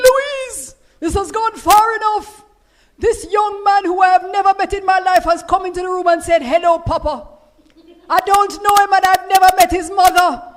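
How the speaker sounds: booming voice, very loud and very high. Retelling what a husband said to Louise: Eric Coverley's booming voice. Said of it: "who had this booming voice".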